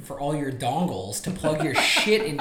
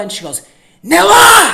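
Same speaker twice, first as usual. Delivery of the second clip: mock toddler yell, much higher and louder; 15 dB louder than usual. Parent retelling asking Hattie to say a word, imitating Hattie's yell. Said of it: "yells it at the top of her lungs".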